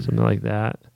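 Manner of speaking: ordinary delivery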